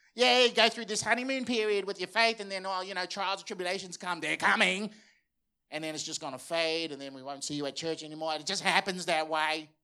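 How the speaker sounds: sceptical know-it-all tone. Addressing an audience about faith, the speaker mocks a skeptical critic. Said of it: "do the critic's voice".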